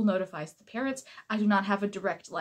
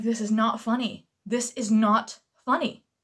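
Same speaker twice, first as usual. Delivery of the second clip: put-on stern, serious tone, louder; 4 dB louder than usual. Retelling scolding giggling students: retelling a serious rebuke. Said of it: "I got really serious".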